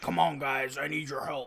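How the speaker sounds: exaggeratedly deep, super low dub-style voice. Mimicking a scaredy-cat character's English dub, in a super low voice. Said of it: "voice is like super low".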